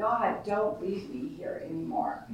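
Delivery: acted desperate sobbing. The speaker recalls a desperate moment, re-enacting the sobbing from back then. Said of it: "I just was sobbing".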